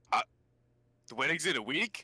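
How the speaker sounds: high-pitched, surprised, taken-aback tone. Told the wedding is in a week, answering: surprised. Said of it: "Why do you sound surprised?".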